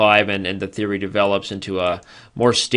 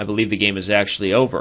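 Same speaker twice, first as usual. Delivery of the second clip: ordinary talk, nothing marked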